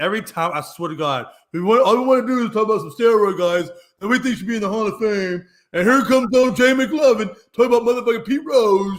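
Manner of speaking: teasing, mocking imitation voice. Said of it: "he's like".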